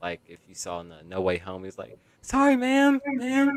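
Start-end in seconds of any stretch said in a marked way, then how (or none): 2.2-3.6 very high, loud, raised shout. Describing a movie scene, quoting Spider-Man mid-fight in a high-pitched Spider-Man voice. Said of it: "making that kind of high pitched voice".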